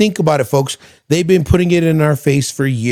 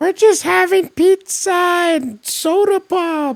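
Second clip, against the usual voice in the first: mock young kid voice, higher; 13 semitones higher than usual. Retelling a governor's recorded phone call: imitating someone sounding like a fifth grader at a pizza party. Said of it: "Why do you sound like you're at a fifth grade pizza party?".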